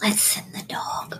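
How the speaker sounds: very quiet, hushed whisper. Near guards and a digging noise, Sybil speaks up, whispering. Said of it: "Sybil whispers and says".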